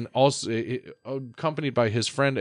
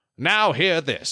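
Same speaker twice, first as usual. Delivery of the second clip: put-on pitched-up old-timey radio announcer voice; 6 semitones higher, 4 dB louder than usual. Joking about a whole podcast done this way, in an old-timey radio announcer voice. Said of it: "We should do a whole podcast in old-timey radio voice".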